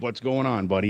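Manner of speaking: ordinary talk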